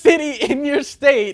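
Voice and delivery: loud, high-pitched shouting. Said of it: "Why you yelling at me?".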